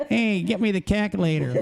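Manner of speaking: put-on New York accent. Speaker jokes how someone from new york would say calculator, new york accent. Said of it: "somebody like from New York would say it that way".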